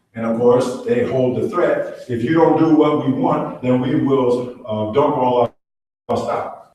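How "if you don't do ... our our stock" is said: plain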